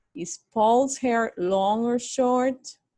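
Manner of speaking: rising tone through long or short. English lesson on question intonation, rising tone on long or short. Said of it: "the intonation has to rise".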